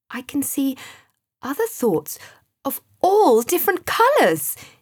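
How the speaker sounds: thrilled, lively, excited, swooping voice. Staring into a swirling spiral of thoughts, he reports what he sees: excited. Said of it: "he said excitedly".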